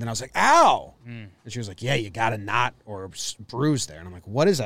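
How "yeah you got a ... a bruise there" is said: put-on old-school New York accent. Retelling how Katie found a knot on her back, imitating Katie's old New York voice. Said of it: "She does an old New York voice".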